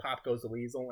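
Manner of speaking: ordinary delivery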